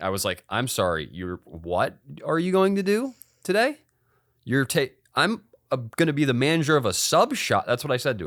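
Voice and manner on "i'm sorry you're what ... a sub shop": frantic, stumbling, high, swooping freaked-out yell. Retelling a courtroom outburst at the judge: retelling a yell at the judge. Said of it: "I yelled that at him".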